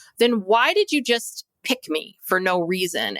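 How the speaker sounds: acted, really mad, indignant outburst with swinging pitch. Retelling what Mary said to her husband: imitating Mary, really mad. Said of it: "She's really mad. She's like".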